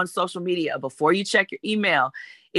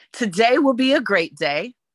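confident, self-assured, pitched-up delivery; 5 semitones higher, 3 dB louder than usual. Leading an affirmation for a listener to repeat: said with confidence. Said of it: "You have to say it with confidence".

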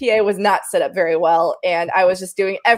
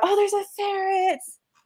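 very high, shouted call; 12 semitones higher, 6 dB quieter than usual. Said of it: "shouted out".

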